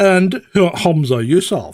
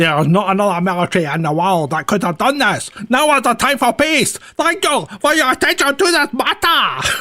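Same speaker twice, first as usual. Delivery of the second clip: bad put-on Japanese accent throughout; 5 semitones higher than usual. Reading out a mock announcement, in a bad Japanese accent. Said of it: "You can't do it without lapsing into the Japanese um, bad accent".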